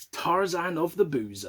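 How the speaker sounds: normal talking voice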